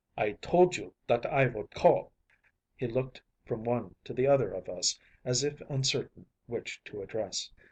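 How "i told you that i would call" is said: put-on deep harsh voice, strong German accent, louder. Reading a story, a masked visitor asking about his note: deep harsh voice, strong german accent. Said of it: "he asked with a deep, harsh voice and a strongly marked German accent".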